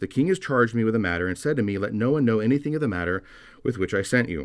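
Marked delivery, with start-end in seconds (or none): none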